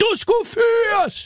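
play-acted, shrill, very high yelling shout. Retelling an older man with a walker shouting in his face, re-enacted shouting. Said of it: "så råbte han mig lige i hovedet".

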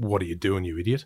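ordinary delivery

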